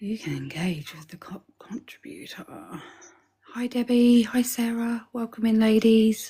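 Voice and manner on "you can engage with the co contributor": soft, unvoiced whisper. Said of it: "so I'm gonna talk quietly".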